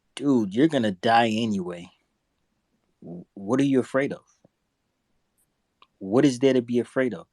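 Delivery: relaxed, calm, cool, composed delivery. Retell what a man said that impressed you, imitating a calm, cool delivery. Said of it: "he said it so calmly and so cool".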